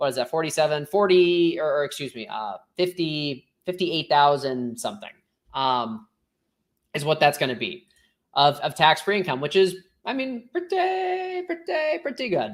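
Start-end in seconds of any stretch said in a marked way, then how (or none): 10.5-12.5 very high, swooping, sing-song, drawn-out bad drawl. Summing up tax-free income as a joke: Larry David impression. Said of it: "that's my terrible Larry David impression".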